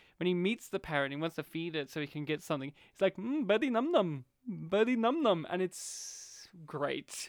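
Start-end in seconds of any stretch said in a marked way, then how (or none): 3.2-5.5 put-on heavy Indian accent, higher. Retelling a film scene where a character coaxes a parrot: imitating Peter Sellers' thick Indian accent. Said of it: "him with his thick Indian accent in the movie".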